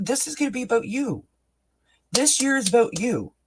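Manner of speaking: very high voice, overcome with feeling. Speaking to listeners about the year ahead: getting emotional. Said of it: "and I'm getting emotional".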